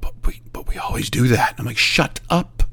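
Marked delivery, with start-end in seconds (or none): 0.0-1.5 put-on fear, quieter and slower. Retelling how the technicians turned around and answered: imitating a fearful reply. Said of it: "look at me with fear and go".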